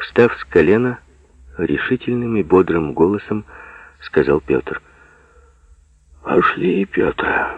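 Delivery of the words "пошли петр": submissive, meek, very high-pitched voice. Ignat Vasilyevich, getting up heavily from the ground, answers Pyotr meekly. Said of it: "покорно сказал Игнат Васильевич".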